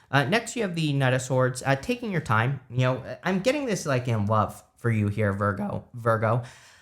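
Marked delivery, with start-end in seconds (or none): 5.3-6.4 breaking, cracking voice on Virgo. Giving a tarot reading for Virgo, voice cracking. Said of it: "so my voice is cracking".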